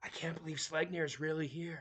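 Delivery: whispering ogre voice. Narrating a game scene as the ogre barkeep, whispering behind his hand. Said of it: "puts his hand over his mouth slightly and whispers".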